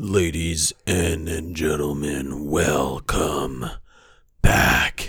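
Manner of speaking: put-on voice, very deep and very slow. Opening the show for listeners; very deep voice. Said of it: "That was my deepest ever intro".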